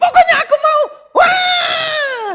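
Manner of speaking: put-on very high, loud child's tantrum shriek. Retelling a child insisting on a toy in a mall: imitating a screaming child. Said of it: "Teriak-teriak di mall".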